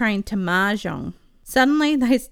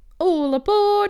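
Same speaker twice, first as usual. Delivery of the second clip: very high-pitched shout; 11 semitones higher, 4 dB louder than usual. Reading a story, a character who has just leapt to his feet: shouted. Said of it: "he shouted".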